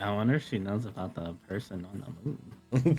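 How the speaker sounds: soft, half-whispered musing to oneself. Speaking in character to oneself about the bazaar leader: half-whispering in character. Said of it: "I'd whisper".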